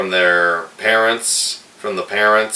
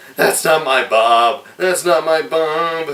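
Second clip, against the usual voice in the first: distraught, slightly unhinged, high crying with disbelief; 8 semitones higher than usual. Retelling a film scene where the mother cries over her burned husband: imitating a crying mother. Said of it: "she's crying, just acting, uh, a little crazy".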